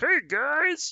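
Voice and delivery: very high, loud, froggy puppet voice. With something in their throat, the speaker greets the audience in a Kermit the Frog voice. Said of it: "I sound like Kermit the Frog".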